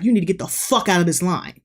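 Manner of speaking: acted furious, angry tone. Retelling confronting a man who cut in line, re-enacting an angry outburst. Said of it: "I was pissed".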